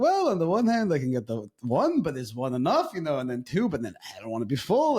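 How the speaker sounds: put-on old man voice with pitch swinging up and down.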